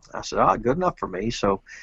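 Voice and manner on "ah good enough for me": ordinary delivery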